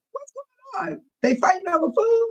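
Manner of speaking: very high, fast, rattled-off excited voice. Retelling seeing police at the pantry while driving: imitating own excited voice. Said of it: "my voice was all excited".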